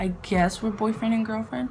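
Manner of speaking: ordinary delivery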